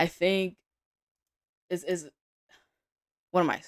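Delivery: stuttering, tripping and stumbling over words. Trader reviews chart zones for viewers, stuttering. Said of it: "I'm stuttering".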